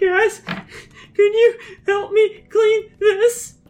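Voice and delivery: tearful, high voice. Speaking in character, asking the group to help clean up, in a weepy voice. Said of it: "I'm not going to keep doing my weepy voice".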